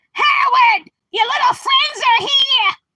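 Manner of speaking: very high, shrill hollering. Calling out to Howard as his mom, in a Mrs. Wolowitz voice. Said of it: "like Howard's mom".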